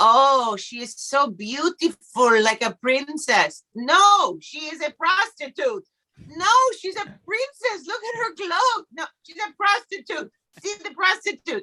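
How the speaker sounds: bad put-on Israeli accent. Quoting an astrology teacher from Israel, in a terrible impression of Israeli teacher. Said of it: "I will do a terrible impression".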